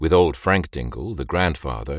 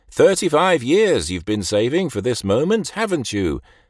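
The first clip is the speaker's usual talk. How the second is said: loud, condescending, pitched-up patronizing tone; 7 semitones higher than usual. The doctor keeps addressing mr. dingle, loud and condescending. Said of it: "he said in a loud, condescending voice".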